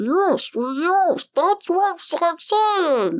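very high, stuttering, garbled creature voice. Voicing the barely understandable words of a recorded salamander, in a garbled salamander voice. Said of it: "That is going to be my salamander voice".

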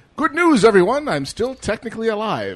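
very high-pitched and loud. Retelling the next scene: Professor Farnsworth voice. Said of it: "he's like".

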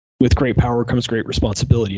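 plain

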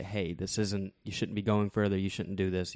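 ordinary talk, nothing marked

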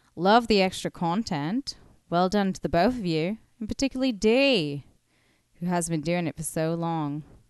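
fake Australian accent throughout. Reading out a listener's message on the podcast, in a put-on aussie accent. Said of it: "I'm doing my Aussie accent".

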